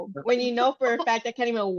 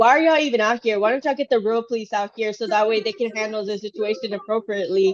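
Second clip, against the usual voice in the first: plain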